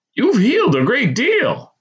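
very high, exuberant, swooping exclamation. Reading a man examining the narrator during therapy; exclaiming. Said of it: "he exclaimed".

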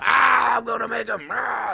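mock rough, ragged, creaky horror-movie scream, drawn-out, high. Retelling a movie scene where a character screams: imitating a character screaming. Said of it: "he's screaming".

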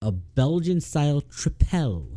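slow Trepel with the P stressed. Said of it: "Emphasis on the P".

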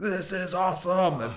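mock excited party-boy scream. Describing the party-boy Aquaman played by Jason Momoa: Jason Momoa screaming, retold. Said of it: "he goes screaming into it".

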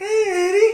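badly done, very high, squeaky put-on cartoon voice. Trying the cartoon character again after a challenge: Mister Poopy Butthole voice. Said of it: "that's so bad".

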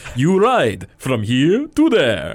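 put-on swooping, muscled Russian strongman accent. Describing a cartoon circus scene, the speaker quotes the muscled Russian in his voice. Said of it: "the muscled Russian".

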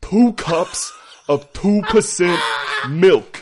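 full-volume, very loud, high screaming. Attempting an audiobook impression, screaming: screaming Samuel L. Jackson impression. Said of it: "I was just screaming".

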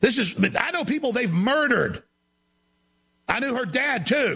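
ranting, going off in an outburst. Speaker breaking off from a video to talk to viewers, ranting. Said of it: "I'm ranting here".

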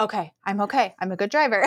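ordinary talk

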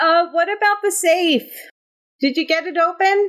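shouting up high. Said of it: "the prisoner shouts".

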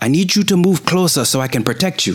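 very high shouted yell in a character voice. Calling out to distant allies during a fight: player character yelling. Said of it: "I wanna yell".

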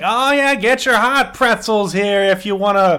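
mocking heckling tone. Retelling how a drunk lady heckled the vendor: imitating mocking heckling. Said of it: "hype him up, but also somehow heckle him".

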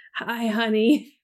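acted-out, imitated cracking voice. Retell a film moment where the limping, bloodied man speaks, imitating a cracked voice. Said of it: "In his cracked voice".

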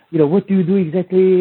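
put-on French Guyanese accent. Retelling how Danny, in town doing a seminar, questioned you, in Danny's French Guyanese accent. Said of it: "this French Guyanese accent".

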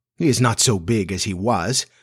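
ordinary delivery

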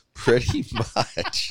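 high, slow, laughing voice.

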